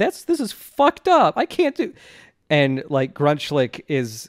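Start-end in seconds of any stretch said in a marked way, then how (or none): 0.0-1.9 put-on tearful voice, higher and louder. Retelling a character crying and refusing to go: imitating someone crying. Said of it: "just crying and saying".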